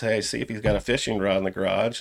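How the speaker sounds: ordinary talk, nothing marked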